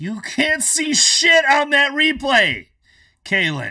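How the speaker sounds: yelling, shrill, very high and very loud. Speaker reacting to someone's claim, yelling at them. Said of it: "I'm yelling at".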